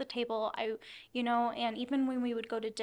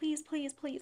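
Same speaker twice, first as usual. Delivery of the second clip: mock crying, higher; 4 semitones higher than usual. Retelling begging a yelling man at their parents' house, imitating crying pleading.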